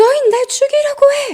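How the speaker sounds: man crying, high, loud and tearful. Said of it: "남자가 막 울면서".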